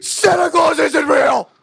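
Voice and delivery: very high, shrill, loud, distraught scream. Retelling discovering the truth as a child: imitating own past screaming. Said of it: "And I'm, like, screaming".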